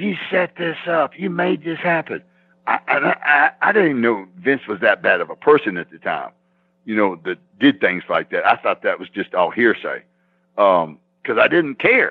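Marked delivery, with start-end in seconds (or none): 0.0-2.2 put-on, high-pitched screaming voice. Retelling a scene back in the dressing room: imitating someone screaming. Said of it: "He's screaming at Vince".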